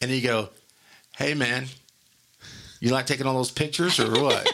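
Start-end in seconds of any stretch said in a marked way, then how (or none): 1.2-4.5 put-on sarcastic, jabbing tone. Retelling what a friend said a month after the wedding: imitating a friend's sarcasm. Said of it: "just sarcasm right in my face".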